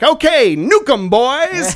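clumsy put-on American accent, loud and slow. Describing how the Brits answer the Nazis, in a bad American accent. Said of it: "you're doing the American voice".

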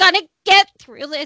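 put-on strained, tense voice. Imitating a woman reassuring her husband about illness: imitating a strained, tense voice. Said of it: "it's a very strained, she sounds, you know, really strained".

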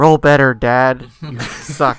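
very loud, bratty, teasing, heckling voice. Retelling what a daughter says to her dad: imitating daughter taunting dad. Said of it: "She's like".

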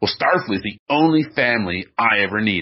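mock-derisive, put-on scornful delivery. Critiquing an actor's delivery of a line at the end, retelling a derisive line. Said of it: "he says it so derisively".

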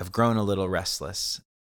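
ordinary delivery

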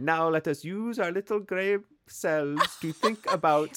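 put-on French accent. Pitching a true crime podcast narrator with a put-on French accent. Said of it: "Get some like French accented person to be like".

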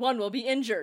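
usual speaking voice

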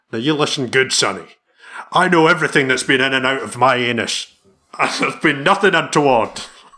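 laid-on, put-on old-school Scottish film-star accent. Saying a line fed by someone else, as a Sean Connery impression. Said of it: "It'd be Sean Connery. If I feed you the line, can you say it?".

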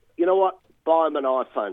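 ordinary delivery

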